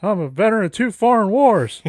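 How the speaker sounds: very upset, high, loud, furious yelling. Quoting a cartoon character who is talking and very upset: upset Mister Anderson voice. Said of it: "he's obviously very upset".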